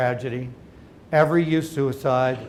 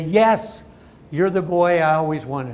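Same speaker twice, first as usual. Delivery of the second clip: enthusiastic, eager delivery; 4 dB louder than usual. A father retells answering his small son in a grocery cart, enthusiastically. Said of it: "enthusiastically say".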